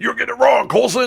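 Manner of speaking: very high, rough, angry movie police-chief bark. Doing a typical angry movie police chief scolding Coulson: angry seventies police chief impression. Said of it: "did you like that impression?".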